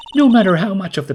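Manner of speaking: voice cracking. Speaker discussing an earlier case after a lot of recording: voice cracking. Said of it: "My voice started to crack there".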